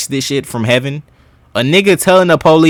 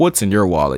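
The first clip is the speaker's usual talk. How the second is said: seductive commercial voiceover narrator voice; 6 semitones lower, 6 dB quieter than usual. Imitating a detective's voice as sounding like Allstate: seductive voice like the Allstate guy.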